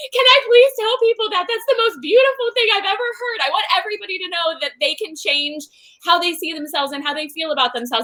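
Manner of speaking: high, tearful words through sobs. Retelling own reply to a client's moving message: retelling own tearful words. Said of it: "And I'm sitting here sobbing".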